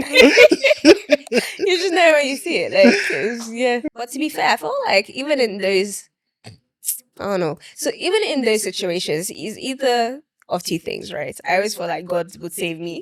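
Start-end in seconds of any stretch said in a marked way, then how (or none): 0.0-2.7 slow, high, drawn-out laughing drawl. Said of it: "I don't even have to say none".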